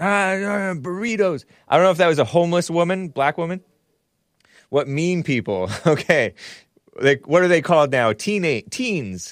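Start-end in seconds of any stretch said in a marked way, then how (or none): 0.0-1.4 grating, unfriendly, harsh, high street-hawker voice. Mimicking a woman's voice the speaker dislikes, imitating a harsh voice. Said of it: "I don't like that harsh".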